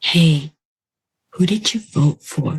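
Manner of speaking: put-on quiet, hushed, almost whispered voice. Retelling what an aunt asked during a family visit, imitating aunt's quiet voice. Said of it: "my aunt comes quietly to me".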